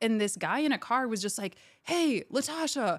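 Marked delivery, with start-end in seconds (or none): 1.8-3.0 slow, high-pitched call. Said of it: "just yelling at me out of a car".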